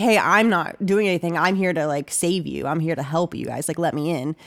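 ordinary delivery

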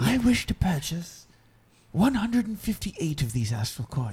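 high, shouted stage whisper. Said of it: "You're gonna whisper, yell".

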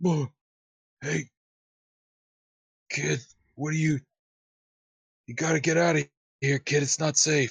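wounded man coughing words out. In a game, voicing Fred as he drags himself up, injured and coughing. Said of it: "he coughs and kind of drags himself up".

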